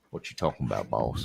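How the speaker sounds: put-on American accent, very hushed, low and deep. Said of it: "That was American".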